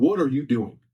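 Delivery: mock furious, angry, demanding tone. Retelling what a figure by the bed asked: imitating an angry voice. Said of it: "just angry".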